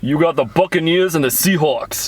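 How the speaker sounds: put-on New Jersey accent. Asked to announce the next matchup in their best Jersey accent. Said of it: "Announce this next one in the next Jersey".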